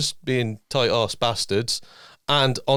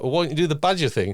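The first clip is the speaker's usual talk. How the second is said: normal talking voice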